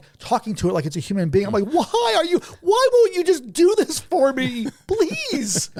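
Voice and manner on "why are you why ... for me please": mock very high, slow, drawn-out frantic yell. Retelling pleading with his computer in his office, retelling yelling at it. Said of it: "I'm yelling at the computer".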